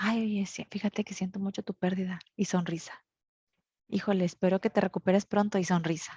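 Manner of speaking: hushed voice while smiling. Showing how one might offer condolences at a wake: very soft voice while smiling. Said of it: "hablando muy bajito, pero sonriendo".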